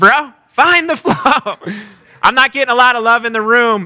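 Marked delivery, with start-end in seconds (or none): 0.0-1.6 slow, chill, laid-back surfer-dude drawl. Speaker shows an audience how a surfer would say a phrase, talking like a surfer. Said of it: "you have to say it like a surfer".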